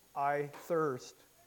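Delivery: ordinary delivery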